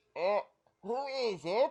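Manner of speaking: put-on tiny elderly man voice. Voicing a blind old man answering a knock: tiny old man voice. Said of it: "a little tiny old man".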